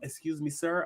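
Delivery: very quiet, soft, careful, deferential, tiptoeing delivery. Imitating a man who speaks softly so as not to offend, imitating someone speaking softly. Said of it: "he's speaking softly".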